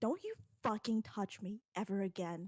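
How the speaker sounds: voice dripping with spite, malicious and venomous. Gripping someone's arm as tight as she can, a character speaks, malicious. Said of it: "a quite frankly magical amount of malice in her voice".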